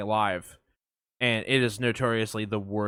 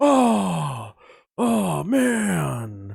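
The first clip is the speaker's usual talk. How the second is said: breathy, exasperated oh, drawn out and swooping; 9 semitones higher, 5 dB louder than usual. Showing how to get into a Nick Cage voice: breathy exasperation. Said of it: "get into my Nick Cage, I go".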